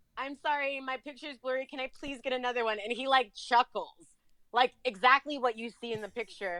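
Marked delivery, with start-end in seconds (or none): 0.1-2.7 foolish, flustered, blubbery voice. Retelling walking up to him again while acting a fool: mock blubbering. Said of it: "acting a fool and blubbering".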